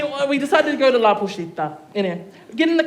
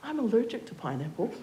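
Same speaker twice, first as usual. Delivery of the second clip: very soft, very quiet leaning-in whisper; 13 dB quieter than usual. Retelling how a date leaned over the table, imitating a whisper. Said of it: "he whispers to me".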